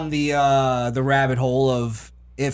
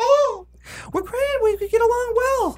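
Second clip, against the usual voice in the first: very high, slow, squeaky cartoon voice. Speaker mocking an unhappy man asked about his girlfriend, Mickey Mouse voice. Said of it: "They sound like fucking Mickey Mouse".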